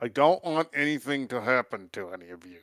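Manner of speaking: words pushed out through clenched, gritted teeth. Urged by the others to stop repressing feelings, replying through gritted teeth. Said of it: "he says through gritted teeth".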